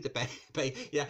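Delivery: laughing through the words mid-sentence. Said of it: "I'm sorry for laughing".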